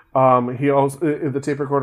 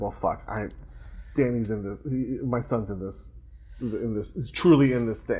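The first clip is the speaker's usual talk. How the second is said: soft, low, stunned muttering. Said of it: "So he's like".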